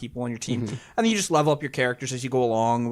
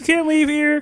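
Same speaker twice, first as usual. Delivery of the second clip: put-on frog puppet character voice; 8 dB louder than usual. Retelling game guards telling the princess she can't leave: Kermit the Frog voice. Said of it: "They sound so much like Kermit the Frog".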